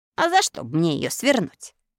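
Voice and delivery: sharp, irritated tone. Bilan answers the iron woodcutter who just called him a traitor, snapping back. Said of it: "огрызнулся Билан".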